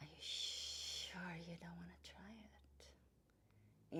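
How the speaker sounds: very slow, hissing, snake-like whisper. Telling the Eden story, voicing the trickster snake: hissing snake voice. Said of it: "says with a hissing voice".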